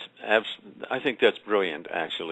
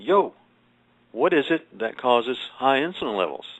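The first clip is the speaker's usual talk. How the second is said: play-acted screaming and yelling; 3 semitones higher than usual. Retelling yelling at researchers in a video: retelling own scream at a screen. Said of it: "I'm screaming at the screen and say".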